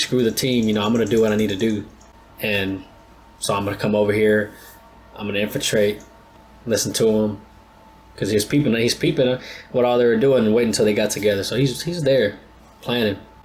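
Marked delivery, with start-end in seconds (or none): none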